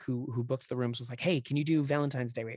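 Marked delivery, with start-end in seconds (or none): none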